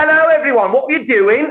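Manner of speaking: very high-pitched northern English accent. Describing coming back after time spent in the north, in a northern english accent. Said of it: "spent a bunch of time in the north".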